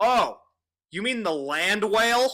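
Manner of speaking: very loud, high, blurted, nothing toned down. Quoting him answering about the girl behind, at full volume. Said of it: "at full volume".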